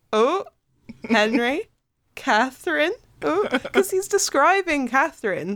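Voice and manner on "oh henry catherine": put-on mischievous, needling, teasing, pot-stirring tone. Retelling a book character's line to another reader: imitating Eleanor teasing. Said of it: "stirring the pot".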